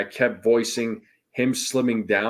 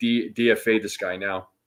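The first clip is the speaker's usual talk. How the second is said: plain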